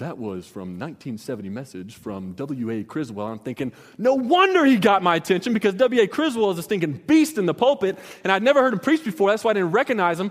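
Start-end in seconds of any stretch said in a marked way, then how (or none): 0.0-3.3 very low, deep, soft radio announcer voice. Retelling the radio DJ announcing the sermon's source, deep DJ voice. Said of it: "his deep DJ voice".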